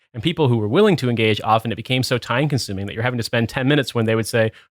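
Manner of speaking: ordinary delivery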